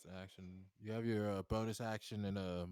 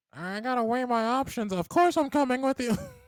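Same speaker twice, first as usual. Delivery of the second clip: shrill creature voice, very high and very loud; 16 dB louder than usual. Playing a kobold answering an invitation, in a kobold voice. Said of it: "I have to keep doing this voice".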